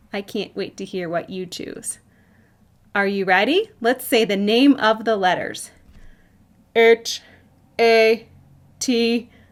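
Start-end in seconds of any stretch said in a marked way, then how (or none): 6.7-9.2 loud, flat, mechanical robotic voice. The host spells a word letter by letter for the audience in a robot voice. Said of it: "I'm going to use my robot voice".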